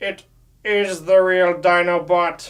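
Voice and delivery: slow, loud, dramatic delivery. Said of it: "But no, really".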